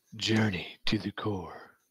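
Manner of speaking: put-on super cool voice. Reading a quest book line aloud on request: put-on super cool voice. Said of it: "read the last line of the first paragraph in a super cool voice".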